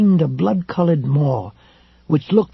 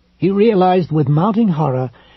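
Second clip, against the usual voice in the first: plain reading voice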